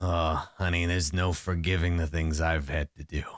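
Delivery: very low, gritty, gravelly voice. Recounting a man's reply to a woman in a scene, gravelly voice. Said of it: "he says in this like gravelly this gravelly voice".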